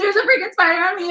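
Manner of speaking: play-acted, high, frantic screaming in full panic. Retelling finding a spider on oneself, calling to Mom: imitating own panicked screaming. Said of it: "actually having a panic attack".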